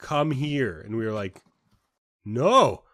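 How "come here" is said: acted aggressive, angry yelling. Recounting a lady calling them over, the speaker imitates her aggressively mad yell. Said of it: "getting more and more like aggressively mad".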